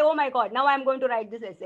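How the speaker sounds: plain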